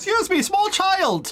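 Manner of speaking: shouting. A player character calls out to a Thieves Guild child, shouting at a child. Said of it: "I am shouting at that child".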